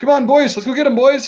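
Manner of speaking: put-on very high-pitched voice with Canadian accent. Imitating Canadians the speaker games with, in a Canadian gamer accent. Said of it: "they sound just like you know a northern Midwest American accent".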